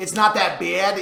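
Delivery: New York accent. Asked to say the phrase one more time, in a New York accent. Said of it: "You're from New York".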